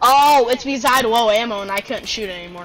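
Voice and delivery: ordinary talk, nothing marked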